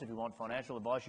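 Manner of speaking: mock quiet, fast, rattled-off fine-print-style delivery.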